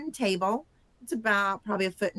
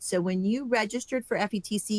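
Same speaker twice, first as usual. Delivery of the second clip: ordinary delivery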